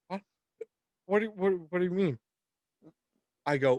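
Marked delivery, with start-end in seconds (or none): 0.1-2.2 mock groggy, sleepy, confused just-woken voice. Retelling waking the mother to say there's a bat: imitating a groggy just-woken mother. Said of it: "she wakes up out of a fucking stupor".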